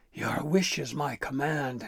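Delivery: growled character voice. Narrator reading Nash's reply to Gristle, in Nash's growl. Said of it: "Nash growled".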